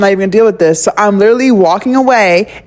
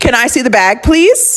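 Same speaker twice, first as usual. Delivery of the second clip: nice-sounding tone with a nasty edge; 3 semitones higher than usual. Retelling a cashier's request at a store counter: imitating a nasty tone. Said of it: "she had this nice, nasty tone".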